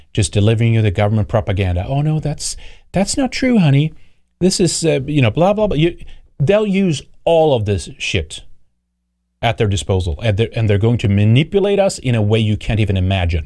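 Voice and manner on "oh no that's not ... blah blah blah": put-on sweet grandma voice, higher pitch. Warning listeners about manipulation, putting on a sweet grandma voice. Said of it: "the sweet voice of your grandma".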